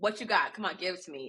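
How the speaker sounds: play-acted goading challenge, barked out. Retelling how a character barks at a dragon: imitating someone barking a challenge. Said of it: "he basically barks at the dragon".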